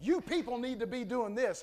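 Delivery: ordinary talk, nothing marked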